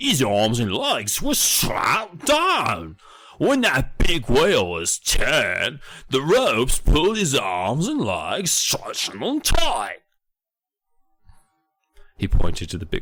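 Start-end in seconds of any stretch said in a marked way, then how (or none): 0.0-10.0 fake British accent, higher. Reading a tour guide's lines aloud from a story: put-on british accent. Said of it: "as I'm being British".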